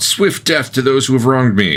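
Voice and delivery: high-pitched shouting. Describing a magic bow whose whisper becomes a shout, shouting. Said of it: "the bow's whisper will become a shout".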